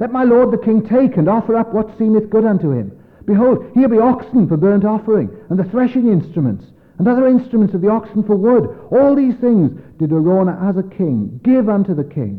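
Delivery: high, loud, urgent pleading voice.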